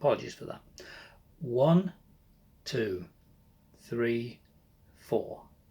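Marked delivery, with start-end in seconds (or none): 1.4-5.4 slow, unhurried, drawn-out delivery. Restarting a count after going too fast, slower count. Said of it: "So a bit of a slower count".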